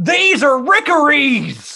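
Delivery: high-pitched, loud yelling. Retelling how Hugh warned the group at dinner: imitating someone yelling. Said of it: "Hugh stands up and yells".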